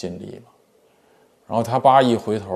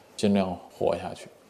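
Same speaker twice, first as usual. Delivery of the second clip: normal talking voice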